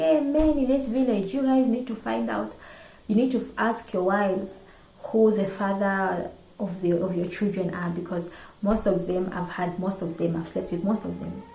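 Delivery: normal talking voice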